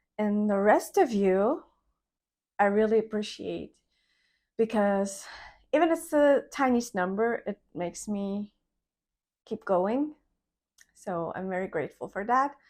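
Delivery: emotional grateful tone. Thanking the few subscribers of the channel: getting emotional. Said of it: "I'm getting emotional".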